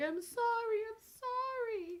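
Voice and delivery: very high, very slow, drawn-out fake pleading tone. Playing a character who pretends to apologize to the mime: pretend pleading apology. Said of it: "pretending to apologize in mime, ... I'm acting like".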